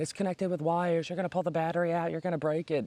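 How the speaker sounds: put-on, high-pitched screaming. Retelling how girls warned a drunk friend: imitating girls screaming. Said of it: "the girls next to the guy are screaming".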